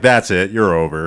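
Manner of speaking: put-on angry character voice. Quoting a character's line from when he's pissed off: imitating an angry character. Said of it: "his quote when he's pissed off".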